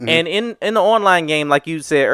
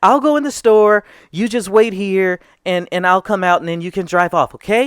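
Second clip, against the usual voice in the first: put-on sweet, very nice kid voice, higher; 4 semitones higher than usual. Retelling a kid's plan to rob a store in a game: imitating a very nice kid. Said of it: "He sounded like the nicest kid".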